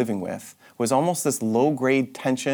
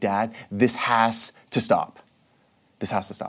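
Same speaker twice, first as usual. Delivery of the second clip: put-on furious tone, slow, with raised voice. Retelling walking into his dad's office furious: retelling his own raised-voice demand. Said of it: "raising my voice. And I walked into my dad's office and demanding".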